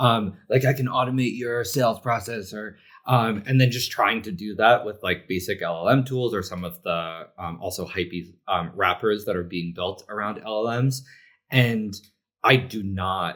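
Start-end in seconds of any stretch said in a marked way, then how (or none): 0.0-2.5 slick, put-on professional salesman voice. Mocking people pitching to small companies, in a put-on pro sales voice. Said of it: "let me take your my pro voice now".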